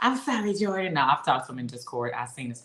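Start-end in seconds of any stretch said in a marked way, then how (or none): 0.0-0.9 imitated lisping voice, pitched higher. Imitating how a man said a line: put-on lisping voice. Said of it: "That's a great character voice that you just did".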